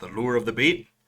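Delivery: put-on Canadian accent. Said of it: "Tried to say that like a Canadian".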